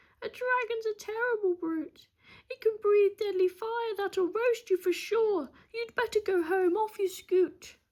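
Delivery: very high, fearful, trembling witch voice. Narrator reads the witch's reply to a dragon seeker, trembling with fear. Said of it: "she trembled with fear".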